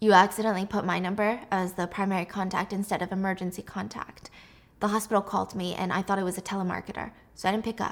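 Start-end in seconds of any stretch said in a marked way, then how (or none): none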